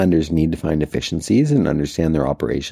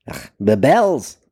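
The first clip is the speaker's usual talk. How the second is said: put-on German-sounding accent with higher pitch; 7 semitones higher than usual. Telling a joke, voicing the Scotsman's line in a German-sounding accent. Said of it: "That was German".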